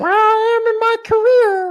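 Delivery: very high, loud, squeaky puppet voice. Urged by another speaker to do it, the speaker answers in an Elmo voice. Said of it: "Elmo says".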